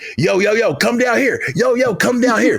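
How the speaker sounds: very high-pitched, calling-out voice. Retelling how John Cena called hype men down the ramp: imitating John Cena calling people over. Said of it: "And he's like".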